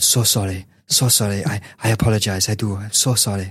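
put-on speech with a Catalan accent. Imitating a coach finally apologising for his comments: Pep Guardiola impression. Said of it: "in classic Pep style".

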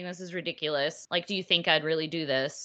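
mock laughing while talking. Recounting a man on the rack dismissing the accusation, retelling laughing speech. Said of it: "he kept laughing and saying".

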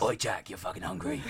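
put-on gremlin character voice. Voicing the hunger gremlin inside you, put-on gremlin voice. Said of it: "the gremlin inside you that goes".

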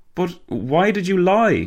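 gasped out. Narrator reads Walter speaking to Arthur in the driver's seat, gasping. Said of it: "Walter gasped".

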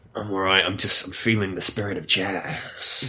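gruff, rough tone. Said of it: "You're gruff today".

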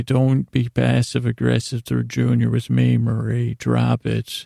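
ordinary delivery

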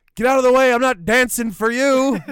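acted shout, high and loud.

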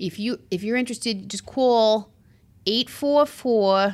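put-on Long Island-accented voice. Imitating a commercial announcer: imitating a Long Island accent. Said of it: "the Long Island accent is alive and well".

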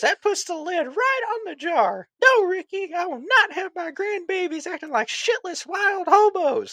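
put-on very high-pitched grandmotherly voice. Retelling a favorite movie scene, imitating the Talladega Nights grandma. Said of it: "And she goes".

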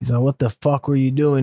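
put-on furious, angry scolding voice. Speaker retells his dad scolding him in the car, imitating an angry scolding. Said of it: "he just let me have it".

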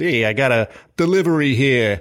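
put-on loud, real, strong New York accent. Retelling a museum visit where the kids hide in a giant cart, as Buzzy in a New York accent. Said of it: "in a real New York accent says".

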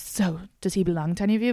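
put-on French accent. Retelling what a woman asked the group: imitating a French accent. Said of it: "But in, like, a French accent".

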